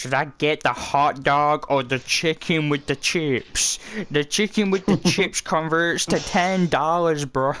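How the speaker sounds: heavy put-on American accent, high and thick. Imitating an American ordering food abroad, in a strong American accent. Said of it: "Americans with the strongest accent ever".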